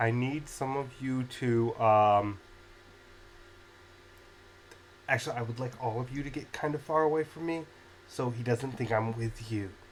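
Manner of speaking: hushed, whispered voice. Voicing a character who leans toward some listeners, whispering. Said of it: "he kind of whispers towards some of you and goes".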